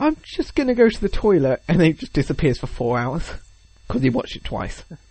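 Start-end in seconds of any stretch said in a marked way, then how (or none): 0.0-1.6 pitched-up words spoken through a yawn. Retelling how a guy excuses himself at the movies, imitating a yawning guy. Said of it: "the guys just like yawns and goes".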